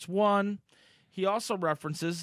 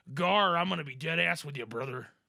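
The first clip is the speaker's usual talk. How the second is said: put-on wrestler pirate voice; 2 semitones higher than usual. Joking about a pirate, doing a Hulk Hogan voice as a pirate. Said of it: "doing Hulk Hogan's voice as a pirate".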